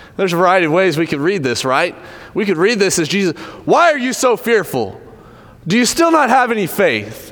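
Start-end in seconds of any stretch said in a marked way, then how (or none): 3.7-7.3 harsh, caustic, biting, swooping high voice. Discussing a bible passage, reading the question as caustically rebuking those addressed. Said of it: "kind of like caustically coming down on them".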